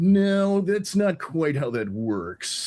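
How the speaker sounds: slow, lifted voice. Showing how the impression of Sean sounds in daily life. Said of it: "that's my Sean".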